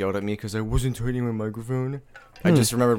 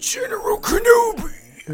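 loud, breathy cyborg voice pushed through wheezing breath; 5 dB louder than usual. Recounting an attempt at a movie impression, doing the General Grievous impression. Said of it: "I was trying to do a General Grievous impression".

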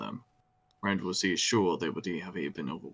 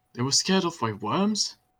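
very high, loud, disbelieving, incredulous outburst; 11 semitones higher, 6 dB louder than usual. Matt, bouncing in his saddle as the party rides, incredulous. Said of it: "Matt said incredulously".

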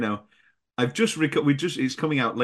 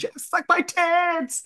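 mock very high, shrieking, drawn-out woman's scream. Describing a film moment when jeff comes on, imitating a woman screaming. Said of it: "a woman screaming".

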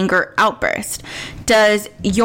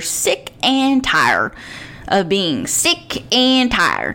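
put-on folksy country accent. Describing the good kind of anger, slipping into a country accent. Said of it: "I just did a country accent".

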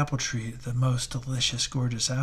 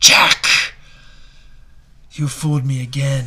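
very loud, hissing devil voice; 11 dB louder than usual. Reading a tale where Jack traps the devil in a tree: hissing devil. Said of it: "The devil hissed".

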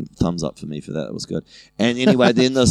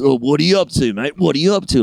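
put-on drunk bullying voice, higher pitch; 5 semitones higher, 3 dB louder than usual. Retelling a bathroom run-in with an older guy: imitating a bullyish drunk guy. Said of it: "quite bullyish".

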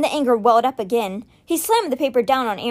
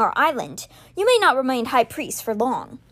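plain reading voice

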